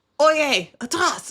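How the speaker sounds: put-on shout. Retelling an encounter with suspected pirates, reenact how you started yelling. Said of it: "and I start yelling".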